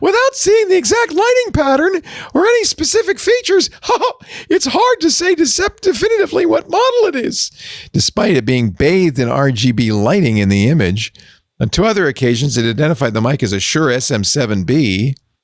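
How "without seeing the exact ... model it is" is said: very high-pitched squeaky voice. Quoting Copilot's reply in a Mickey Mouse voice. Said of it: "I don't know why it sounds like Mickey Mouse".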